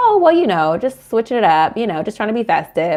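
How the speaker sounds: mock offhand dismissive tone. Retelling her own reply to the wife: imitating a casual brush-off. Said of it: "I play it off".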